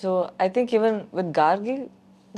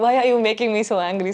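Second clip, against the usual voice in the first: acted tearful, furious, crying, angry yelling; 3 semitones higher, 4 dB louder than usual. Retelling yelling at people at home: imitating own past yelling. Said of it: "I'm yelling at them even more".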